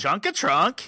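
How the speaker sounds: bad fake Swedish accent. Speaker repeats a name in a terrible Swedish accent. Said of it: "That's my terrible Swedish accent".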